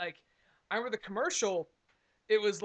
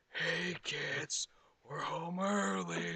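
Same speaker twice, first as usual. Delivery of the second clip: eerie, creepy, very slow, drawn-out drawl. Retelling a toy commercial's played-back line: imitating a creepy voice. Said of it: "but it says it in the creepiest way".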